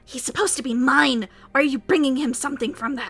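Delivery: harsh rasping voice. Game master voices a yellow-eyed creature confronting a player: very raspy voice. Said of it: "in a very raspy voice".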